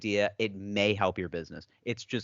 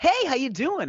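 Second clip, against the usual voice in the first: very high-pitched, loud, overexcited, gushing voice; 6 dB louder than usual. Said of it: "they come across way too excited".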